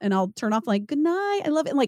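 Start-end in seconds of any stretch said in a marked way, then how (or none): 0.9-1.7 put-on fake-nice, sweet tone, pitched higher. Retelling saying good night after being interrupted, imitating own fake-nice tone. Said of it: "but probably, like, fake nice".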